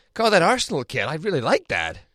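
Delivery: put-on neutral, plain general American accent. Quoting what he said at dinner, in a general American accent. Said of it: "I was just general American".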